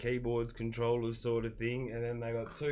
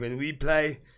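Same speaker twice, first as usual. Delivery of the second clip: very loud, fake put-on German accent; 3 semitones higher, 8 dB louder than usual. Reading a band's rider aloud: put-on German accent. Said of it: "I just read it in the accent".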